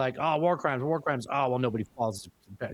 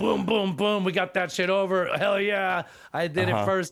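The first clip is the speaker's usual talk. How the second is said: put-on crude New Jersey guy voice, pitched higher; 8 semitones higher, 3 dB louder than usual. Mocking a leader's boast about a quick victory: Trump impression. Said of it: "I'm doing an impression of Trump".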